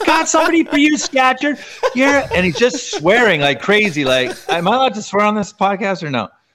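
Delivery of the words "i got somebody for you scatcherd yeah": shrill, very high-pitched, taunting scream. At a game, a player retells a guy screaming from the other bench, imitating a high-pitched scream. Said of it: "he's got his really high-pitched voice".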